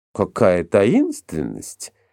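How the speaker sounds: mocking, teasing tone. A woman responds to being asked to keep a secret, mocking. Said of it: "насмешливо сказала Фанни".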